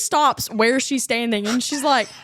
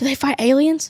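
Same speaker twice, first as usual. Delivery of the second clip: imitated whisper. Retelling asking someone a question about Space Force: imitating own whisper. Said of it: "I whisper".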